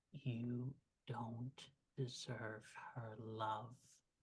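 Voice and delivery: very soft, low, slow, drawn-out menacing whisper. Voicing an attacker who leans close to a wounded character: whispering menacingly in ear. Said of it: "whisper in your ear".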